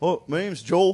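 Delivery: put-on Wisconsin accent. Retelling how a new teammate from Wisconsin introduced himself: imitating Joel's Wisconsin accent. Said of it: "that's my only accent story".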